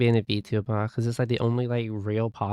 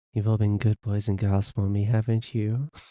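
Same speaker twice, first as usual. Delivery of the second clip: hushed, deep, soft, low mommy asmr voice. Trying out a voice for the audience, in a mommy asmr voice. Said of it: "We can get into a mommy A S M R voice".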